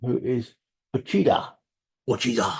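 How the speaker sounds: poor put-on Japanese accent. Reading out a list of names, the speaker puts on a bad Japanese accent. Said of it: "I did do a shit Japanese accent".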